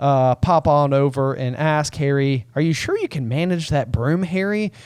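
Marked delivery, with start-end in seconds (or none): 2.6-4.7 fake, feigned show of utter caring concern. Acting out a question about managing a broom, mock concern. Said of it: "With just a voice of total and utter concern".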